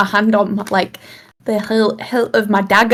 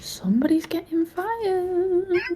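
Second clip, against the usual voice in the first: very quiet, high mumble, "fired" drawn out; 9 semitones higher, 11 dB quieter than usual. Voicing a character's quiet aside: mumbled under breath. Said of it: "Pebbles mumbles under her breath".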